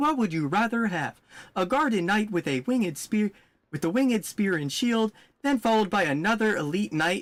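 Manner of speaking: high computer-like voice. Complaining about a game, the speaker quotes a character, imitating the ai voice. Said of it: "because it's the A I voice".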